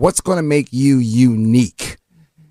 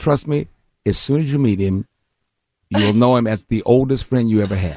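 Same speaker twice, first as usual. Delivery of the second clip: ordinary talk, nothing marked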